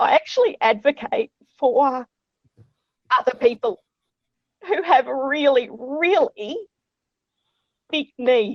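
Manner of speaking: emotional, halting, choked-up voice breaking mid-phrase. Speaker talking about their Twitter account and the cases they follow, getting really emotional. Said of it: "I'm getting really emotional now".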